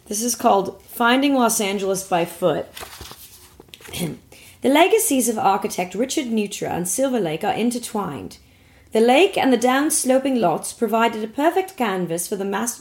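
plain, neutral standard British accent, read aloud. Reading a passage aloud for the others, trying a neutral british accent. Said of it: "I'll just try to do a neutral British accent".

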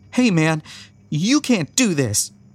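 fierce tone, trembling voice. Reading a story, voicing a woman standing up boldly to a man: ferocious, quivering voice. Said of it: "She speaks in a ferocious tone, though her voice quivers".

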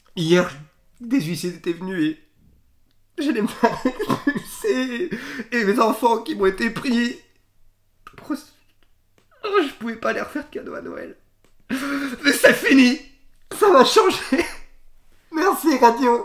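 shrill, loud, very high blubbering speech through tears. A radio contest winner tells the host about his hardships: crying while talking. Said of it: "arrêtez de chialer".

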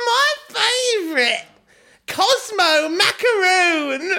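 shrill, very high, delighted, excited squeal. Reading a story aloud, Bella changes the channel and squeals. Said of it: "She squealed".

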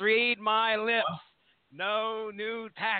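very slow, deliberate presidential address delivery. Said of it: "Not going to do an impression of a president".

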